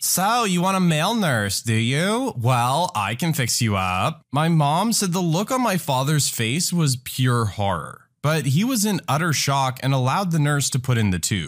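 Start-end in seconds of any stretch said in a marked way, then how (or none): 0.0-4.3 showy, theatrical, flamboyant, drawn-out proclamation. Retelling a nurse bursting into a patient's room: imitating a loud flamboyant announcement. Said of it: "in a loud voice announces".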